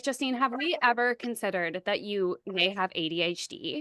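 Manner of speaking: ordinary talk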